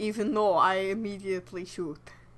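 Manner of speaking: put-on, inaccurate Russian-leaning accent. Re-enacting a gunman's lines from a scene, wrong, Russian-leaning accent. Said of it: "Mine was definitely Russian leaning".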